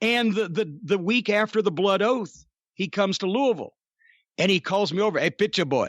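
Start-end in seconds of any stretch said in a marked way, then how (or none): 5.2-5.9 put-on French Canadian accent. Retelling how a wrestler called him over: imitating Joe LeDuc's French Canadian accent. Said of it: "'cause he had the accent".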